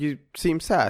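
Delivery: voice-assistant tone. Acting out a phone assistant answering a question: imitating Siri. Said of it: "but Siri's like".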